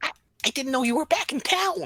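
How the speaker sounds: tiny, very high, squeaky gnome voice. At a bar, a gnome greets a friend who is back in town, gnome voice. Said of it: "gnome voice".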